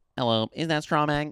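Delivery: put-on alien voice. Mocking how someone would ask their question, talking like an alien. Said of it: "talking like an alien".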